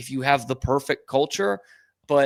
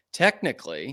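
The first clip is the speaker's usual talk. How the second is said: heavy stress on the word "technically". Talking with another speaker, stress the word technically. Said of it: "emphasis on the word technically".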